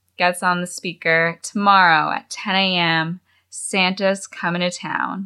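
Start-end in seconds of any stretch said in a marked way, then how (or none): none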